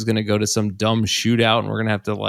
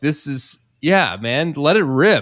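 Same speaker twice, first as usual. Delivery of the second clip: put-on high yell, letting it all go; 5 semitones higher, 4 dB louder than usual. Retelling watching a delayed goal after putting kids down: imitating own past yelling. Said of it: "just kind of yelling".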